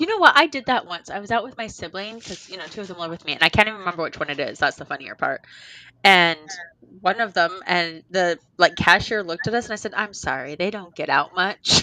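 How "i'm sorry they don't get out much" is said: bone-dry, expressionless, slow and flat deadpan delivery. Retelling what they told a cashier while out with their sibling, deadpanned. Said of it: "deadpanned it".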